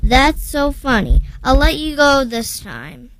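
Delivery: ordinary delivery, nothing marked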